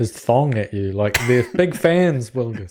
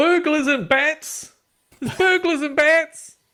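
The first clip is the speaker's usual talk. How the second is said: very high, shrill, alarmed yell. A player in a story game raises the alarm to frightened people in the streets, yelling out. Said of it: "I'm yelling out".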